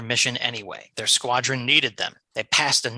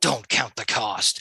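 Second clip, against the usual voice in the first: ordinary delivery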